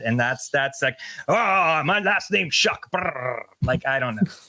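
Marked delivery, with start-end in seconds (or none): 1.3-3.4 deliberately bad put-on Scottish voice with rolled brrr. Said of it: "it would be purposely bad".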